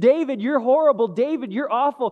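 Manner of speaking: acted mocking, taunting tone. Retelling how Shimei insulted David, acting out the taunt. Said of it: "he taunted him".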